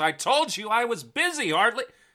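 very high-pitched, shrill, loud yell. Game master voicing a halfling woman as the party opens her door, yelling. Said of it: "shuts a drawer to her desk and yells".

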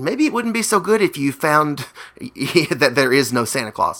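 soft, hushed stage whisper. Retelling a movie character telling the judge something: imitating a half-whisper. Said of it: "he sort of whispers to him".

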